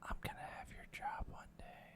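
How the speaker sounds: whispered, hushed, barely audible mutter under the breath. Voicing a character reacting to being handed a room key: muttered under breath. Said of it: "Under his breath".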